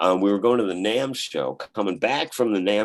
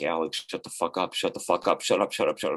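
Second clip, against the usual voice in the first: insistent, hushed, muttered under the breath; 4 semitones lower, 4 dB quieter than usual. Retelling how his buddy in the passenger seat warned him, retelling a muttered warning. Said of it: "under his breath".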